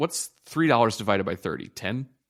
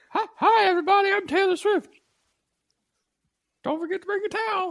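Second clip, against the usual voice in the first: squeaky, very high cartoon voice; 3 dB louder than usual. Greeting everybody as the stand-in host of this episode, in a Mickey Mouse voice. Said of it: "Why do you sound like Mickey Mouse?".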